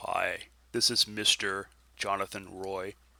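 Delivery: exaggerated put-on deep voice, slow. Showing how he should answer the phone after being called ma'am: deeper voice. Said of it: "I should talk with like a deeper voice".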